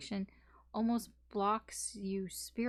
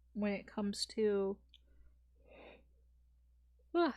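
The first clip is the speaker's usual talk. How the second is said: speaking through a yawn. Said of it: "I did not mean to yawn".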